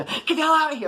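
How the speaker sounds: very high, furious, screeching yell. Retelling how his aunt locked him out, imitating her yelling. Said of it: "How you're like yelling".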